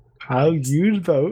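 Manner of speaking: slow, deliberate, careful word-by-word phrasing. Showing the other speaker how to say the phrase, said slower. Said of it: "say it slower".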